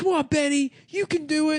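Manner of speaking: very high, eager, encouraging cheering. Speaker describes a dad urging his scared son on, imitating a dad cheering. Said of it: "he's like cheering the kid on".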